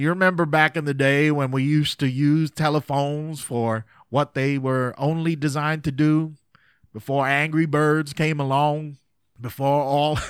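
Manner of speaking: terrible put-on Texas accent. Speaker quotes to an audience what a man told him, in a bad texas accent. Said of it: "y'all are laughing at my Texas accent".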